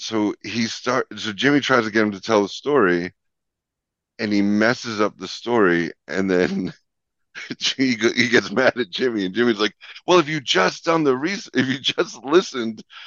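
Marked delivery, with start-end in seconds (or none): 10.1-12.8 reprimanding, high-pitched voice. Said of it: "scolded the guy on air".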